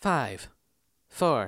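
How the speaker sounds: woman's computer voice. Retelling a countdown from a squawky loudspeaker, a speaker does a woman's computer voice. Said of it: "yours is way better".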